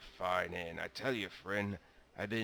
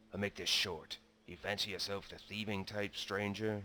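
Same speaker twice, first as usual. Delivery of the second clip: lowered, confidential, conspiratorial voice. A character leans in close to the stranger, lowered voice. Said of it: "He lowers his voice, leaning to you".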